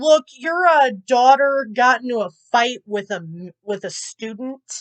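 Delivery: normal talking voice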